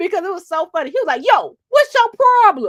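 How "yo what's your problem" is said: loud, high-pitched, heated angry outburst. Retelling how a reporter went off at his cameraman: imitating Nate Rogers going off. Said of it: "he went off".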